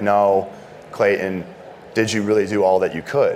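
usual speaking voice

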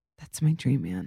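mock sincere, dead-serious, earnest tone. Retelling what a friend said about a dancing celebrity: imitating someone being serious. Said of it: "she was so serious".

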